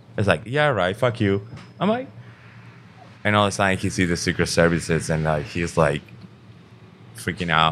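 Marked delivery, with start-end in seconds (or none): none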